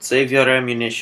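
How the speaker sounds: put-on Russian-accented voice. Retelling Daniel's reply to the soldiers, in a Russian accent. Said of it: "That was more of a Russian accent than Spanish".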